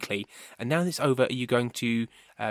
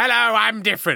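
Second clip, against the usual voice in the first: very high, rough, creaky character voice; 10 semitones higher, 4 dB louder than usual. Introducing new characters for the show, the speaker presents Drexel: Drexel voice. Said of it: "new characters such as Drexel".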